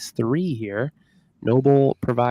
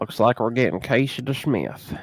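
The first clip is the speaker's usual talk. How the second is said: twangy Southern accent, put-on. Co-host checking the hockey lineup announces the other team's backup goalie, in a southern twang. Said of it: "Southern twang".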